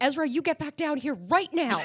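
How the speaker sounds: high-pitched, stern voice. Retelling a woman ordering someone back down, in a put-on mom voice. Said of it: "uses uses mom voice".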